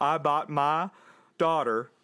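put-on Southern accent. Retelling an emotional man denying a bribe, in a put-on Southern accent. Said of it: "I don't know why I'm doing a Southern".

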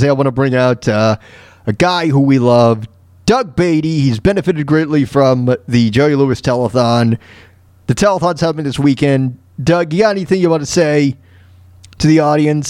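normal talking voice

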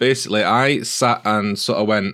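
ordinary talk, nothing marked

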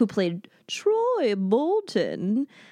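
swooped, theatrical teacher voice. Chatting with a friend about High School Musical, in Mrs. Darbus voice. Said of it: "that was my Mrs. Darbus, the theater teacher voice".

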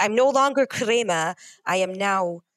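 normal talking voice

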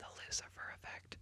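very quiet, hushed, breathy whisper. Saying a film's title while discussing the film, whispered. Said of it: "Just going to whisper that there for a second".

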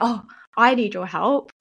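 teasing, jokey, slow delivery. Retelling what people say on hearing about the work: imitating a jokey tone. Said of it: "they say it in a jokey way".

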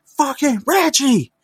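shrill, very high-pitched, loud shouting. Retelling how a man finally yelled at Reggie Jackson: retelling a loud yell. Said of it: "he finally yells loud enough".

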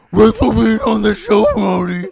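loud, swooping cartoon dog voice. Asked on the show to do Scooby, a guest tries it: bad Scooby-Doo impression. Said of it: "That's such a bad Scooby".

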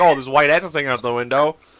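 plain

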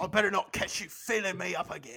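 put-on British accent. Voicing the guards warning a dancing player: British accent. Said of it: "I like the British accent".

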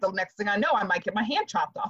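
normal talking voice

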